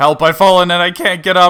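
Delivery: put-on shout. Telling what the panicking shepherd does, shouting in Wally's voice. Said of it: "shouting, ... in Wally's voice".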